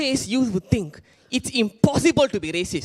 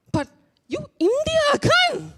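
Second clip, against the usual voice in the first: very high, slow, stunned, shocked disbelief. Retelling what the agent said on the phone: imitating a shocked voice. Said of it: "in a shocked voice".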